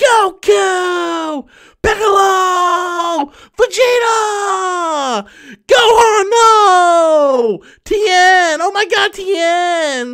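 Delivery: very high, very slow yelling, drawn-out no. Explaining how a cartoon character yells everyone's name, imitating Krillin's yell. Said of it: "Krillin just yells everybody's name all the time".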